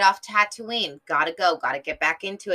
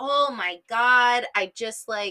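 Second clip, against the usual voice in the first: plain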